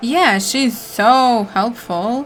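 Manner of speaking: sounding sarcastic. Commenting on a woman who just warned you, sounding sarcastic. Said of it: "Why did it sound sarcastic?".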